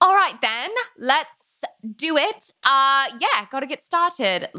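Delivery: fake put-on British accent. Retelling talking to a co-working friend: put-on British accent. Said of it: "sounds like a British person is encouraging me".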